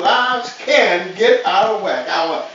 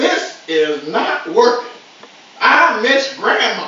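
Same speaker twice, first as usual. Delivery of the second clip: louder, loud exclamatory outburst. Parent retelling their daughter missing her grandma: retelling a loud exclamation. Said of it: "exclaimed to us in a loud voice".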